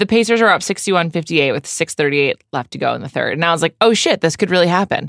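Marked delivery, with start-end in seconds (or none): none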